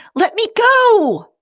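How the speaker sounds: tiny squeaking voice, very high. Reading a story aloud, voicing the speck caught in Spock's hands: tiny squeaky voice. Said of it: "A tiny voice squeaks".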